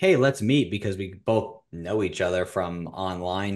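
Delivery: ordinary talk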